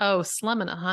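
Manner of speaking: usual speaking voice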